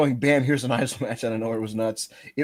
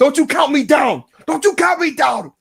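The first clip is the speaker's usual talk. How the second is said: mock angry, very high-pitched shouting rant; 14 semitones higher, 8 dB louder than usual. Imitating someone yelling at a cameraman counting down: imitating Eddie being pissed. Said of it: "He'd be like".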